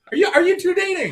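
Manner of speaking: very loud, high-pitched, rushed, blurted, booming yell. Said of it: "I'm yelling".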